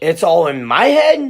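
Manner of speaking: upward pitch rise at end. Reading a character's repeated line aloud: falling statement intonation. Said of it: "to period to question mark".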